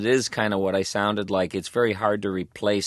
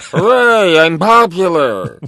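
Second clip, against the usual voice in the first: very high, loud, swooping cartoon voice; 10 semitones higher, 12 dB louder than usual. Describing a poor doctor character, the speaker slips into Zoidberg voice. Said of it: "That voice, you know".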